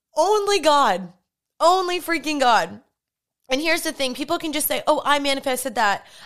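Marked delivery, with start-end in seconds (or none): 0.2-2.8 moved, heartfelt, raised emotional outburst. Speaker recalling a prayer written in a journal years ago, getting emotional. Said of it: "I'm getting emotional".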